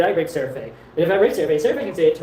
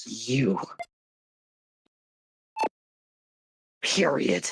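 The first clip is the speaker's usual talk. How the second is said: anime-style character voice, low and swooping; 4 semitones lower, 5 dB quieter than usual. A character answers the other's question in a scene: anime voice. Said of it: "I hate the anime voice".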